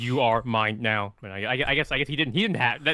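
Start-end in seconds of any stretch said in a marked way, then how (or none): 0.0-1.1 drawn-out, very slow, mechanical put-on robot voice. Showing what the line should have sounded like: imitating a robotic voice. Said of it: "that didn't sound very robotic".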